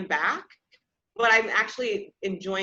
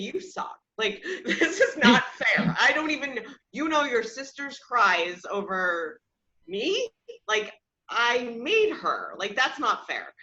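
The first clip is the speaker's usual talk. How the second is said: mock upset, angry venting outburst; 2 semitones higher than usual. A mother retells her own earlier complaint about the baby, retelling an angry, upset complaint. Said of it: "I was getting very angry and upset".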